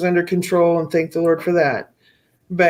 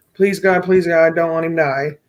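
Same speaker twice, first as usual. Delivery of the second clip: mock begging in a desperate, pleading tone. Retelling how she prayed for her son's life: imitating her own begging. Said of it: "I was on my knees begging".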